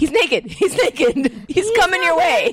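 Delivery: loud screaming yell. Reenacting what they screamed across the house to someone else: retelling a scream. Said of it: "I'm screaming across the house".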